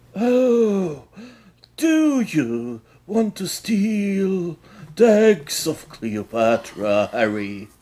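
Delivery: comical high voice, very slow, oh stretched out. Imitating a movie villain who comically sounded like Dumbledore. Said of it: "comically sounded like Dumbledore".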